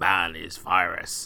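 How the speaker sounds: synthesized, evil computer-villain voice. Describing a scene, quoting a computer villain's line: booming synthesizer voice. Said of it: "that sort of like booming synthesizer voice".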